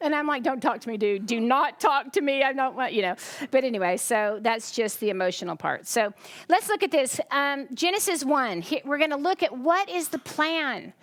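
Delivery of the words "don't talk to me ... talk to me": reenacted angry, crying snap. Recounting her past reply to a man staring at her, retelling her angry, crying snap. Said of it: "And I'm mad, and I'm crying".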